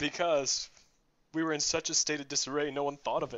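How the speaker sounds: close to crying, on the verge of tears. Explaining why no one thought of the idea back then, sounding about to cry. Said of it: "You sound like you're about to cry right now".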